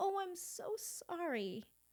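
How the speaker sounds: put-on frail, weak, vulnerable old-lady voice, very slow. A woman apologizes to a man she fears she hurt, in a granny voice. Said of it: "in this granny voice".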